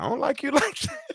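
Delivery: high, laughing, dismissive, offhand tone. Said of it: "I said".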